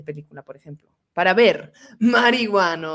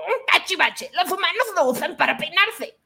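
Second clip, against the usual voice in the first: very high, put-on cartoon sidekick voice; 9 semitones higher, 4 dB quieter than usual. Speaker shows how a character he voiced used to talk: put-on cartoon character voice. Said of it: "Y así decía".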